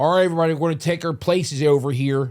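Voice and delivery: put-on Philadelphia accent, bullhorn-style call. Retelling a guy on a bullhorn calling people between scenes, philadelphia accent. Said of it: "With that accent?".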